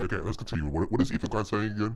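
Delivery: autotuned put-on character voice. Picking the conversation back up, in a Pirate Software voice. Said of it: "time for my pirate software voice".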